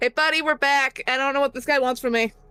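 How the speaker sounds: quick, high call across the room. [name] calls out on returning with Whimsy; shouting out. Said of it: "[name] kind of shouts out".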